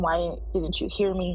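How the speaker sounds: ordinary delivery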